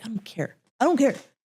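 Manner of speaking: play-acted furious outburst. Retelling a phone call threatening the man: imitating own angry threat. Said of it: "I remember I was so angry".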